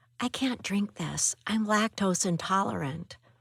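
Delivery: hushed whisper. Offered a warm mug of cocoa, she leans in and whispers. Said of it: "She leans in and whispers".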